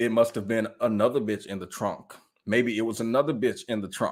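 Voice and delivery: self-assured, unbothered, utterly confident. Retelling how a woman flatly denied being in the trunk: imitating a confident straight-faced denial. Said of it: "she say it with so much confidence".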